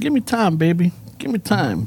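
slow, swooping put-on pimp voice. Quoting the man in the stall to the man waiting outside, in a pimp voice. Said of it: "Was that your pimp voice?".

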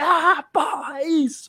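slow, happy, joyful cry, kept mild. Retelling his reaction to a scene while watching at home, re-enacting his shout. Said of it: "Ali eu dei um grito".

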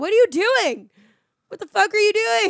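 very high, loud, scolding shriek. Driving back, the speaker re-enacts screaming at a kid through the car window. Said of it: "I'm screaming the kids down".

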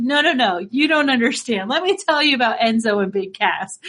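ordinary talk

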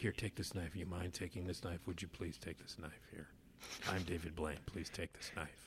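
very quiet, hushed, flat monotone. Retelling a magic trick for a film star: David Blaine impression. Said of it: "that's my David Blaine impression".

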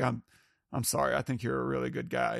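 put-on sincere tone, laughing through it. Retelling a scene where a character apologizes to Norman: sincere laughing apology as Grady. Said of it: "where he's just kinda laughing".

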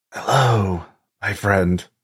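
hushed whispered voice. Narrator voicing a figure in a dream greeting the listener, whispering. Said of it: "You just hear a whisper".

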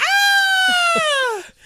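very high, long, drawn-out shriek. Retelling a wife falling down in fright: imitating wife screaming. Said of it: "while screaming".

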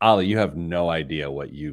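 mock laughing while talking. Retelling how Missus Planner reacted to the buy now, pay later app: imitating someone laughing while talking. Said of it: "She's like, l-, like, laughing".

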